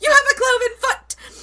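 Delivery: very high, loud shocked shout.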